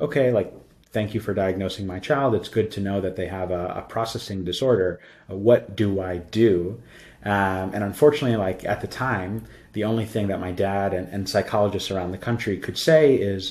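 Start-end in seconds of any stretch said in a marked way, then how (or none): none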